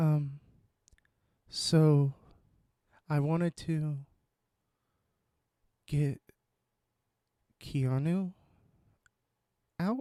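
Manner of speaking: very slow, even, flat, unhurried monotone. Redoing the impression slower after calling the first too fast: imitating Lauren's slow monotone. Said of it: "it's more like".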